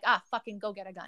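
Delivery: ordinary talk, nothing marked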